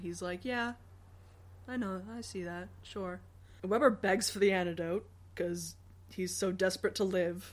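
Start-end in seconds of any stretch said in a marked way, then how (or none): 0.4-3.2 put-on hushed, implacable deadpan whisper. Recapping a story scene, imitating Wickwire's deadpan. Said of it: "Wickwire's just deadpan implacability".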